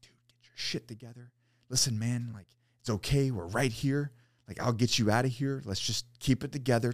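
hushed, urgent, reassuring stage half-whisper. Retelling calming a panicking companion stuck in a hole: retelling a half-whisper. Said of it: "So I'm like whispering".

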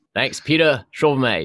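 put-on Australian accent. Trying out the accent from studying abroad, the speaker thanks peter in a put-on aussie accent. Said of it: "try to activate my Aussie accent".

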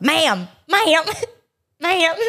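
put-on Southern accent, Georgian. Teasing the other speaker about last night, the speaker imitates his Georgian accent. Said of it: "In your freaking Georgian accent".

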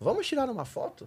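very high, soft, tiny little voice. Retelling how a man asks to take a photo: imitating his little voice. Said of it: "com a vozinha dele".

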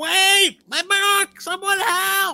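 very high, very slow, drawn-out pleading cry. Voicing a running halfling who calls out for his book: running halfling calling for help. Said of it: "the halfling running, going".

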